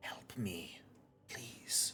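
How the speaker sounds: hushed, whispering voice. Voicing a figure leaning up to the window asking for help: whispering. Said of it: "just whisper".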